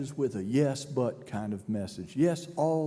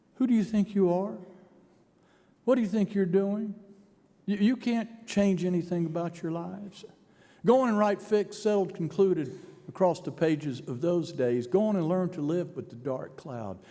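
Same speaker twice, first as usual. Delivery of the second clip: fast, scornful, jeering, sneering mock voice; 4 semitones higher than usual. Voicing a personified death speaking to the listeners, imitating a sneering voice. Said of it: "that kind of sneering voice saying".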